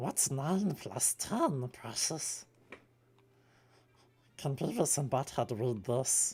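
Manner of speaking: high, slow voice, each word drawn out. Showing off impressions besides Beavis and Butthead, in a Smeagol voice. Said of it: "I can do Smeagol".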